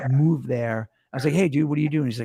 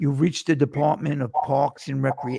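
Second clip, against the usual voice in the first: put-on Long Island accent. Retelling what the parks department phone line said: imitating a thick Long Island accent. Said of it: "the guy would literally be like".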